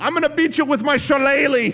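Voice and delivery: high, mock Irish brogue cop voice. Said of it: "They're Irish".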